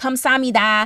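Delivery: 감사합니다 pronounced with an American accent. Speaker learning Korean shows how they say a word, in an American accent. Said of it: "I'm doing it in an American accent".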